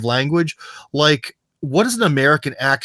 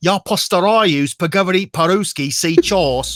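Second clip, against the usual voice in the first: Russian with British accent, much higher pitch; 5 semitones higher than usual. Showing how British speakers sound in Russian, speaking Russian in a British accent. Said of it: "you can hear that they're British".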